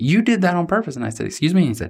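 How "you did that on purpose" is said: put-on high, pointed, accusing voice. Retelling how a man accused them in front of the whole group, imitating an accusing voice. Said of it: "in sort of an accusative voice says".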